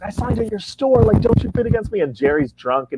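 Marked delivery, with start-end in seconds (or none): 0.0-2.0 very high, heated yelling, pushed way up. Retelling an auction that got heated, imitating his own yelling. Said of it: "I'm yelling at people".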